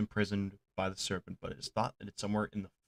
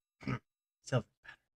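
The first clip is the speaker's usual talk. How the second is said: dismissive, brushing-off little scoff; 4 semitones higher, 3 dB quieter than usual. Voicing a character looking at a handful of copper: scoffing. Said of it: "he kinda scoffs a little bit".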